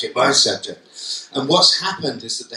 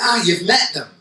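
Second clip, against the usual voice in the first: put-on Manchester accent; 6 semitones higher than usual. Retelling what a man at a school said to him: Mancunian accent. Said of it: "this is me doing a Mancunian accent".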